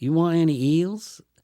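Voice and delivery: put-on heavy Georgia accent, very high and loud. Retelling what a waitress in georgia asked one morning; strong georgia accent. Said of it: "the Georgia accent was so so is so extreme".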